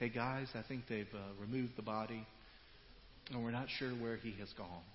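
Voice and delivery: flat, deadpan, low and very quiet monotone. Showing how a Bible line should not be read, in a flat monotone. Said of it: "you don't read that sentence in a monotone way".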